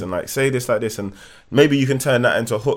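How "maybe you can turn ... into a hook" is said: ordinary talk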